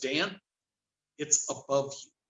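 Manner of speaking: utterly calm, unruffled, soft delivery. Retelling what another man said as something frightened the speaker: retelling a very calm remark. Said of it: "in the most calm voice".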